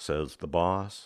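plain

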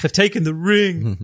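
slow, high-pitched, dramatic movie-style delivery. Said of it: "And he's like".

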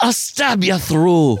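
put-on high-pitched bad Hollywood movie Irish accent. Recalling the one line known from a film trailer: Far and Away Irish accent. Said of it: "in an Irish accent they go".

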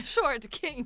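can't keep a straight face. Asked again and again to repeat a phrase, laughing while talking. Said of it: "I can't say that with a straight face".

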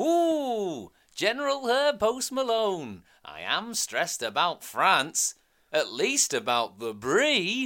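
very high, booming, swooping character voice, stretched ooh. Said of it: "has a similar voice to that of Wallace".

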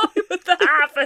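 high, loud, incredulous laughing through the words.

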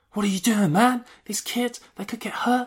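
very high loud shout. Retelling how a man woke a sleeping guy, imitating someone shouting. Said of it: "shouting at him like".

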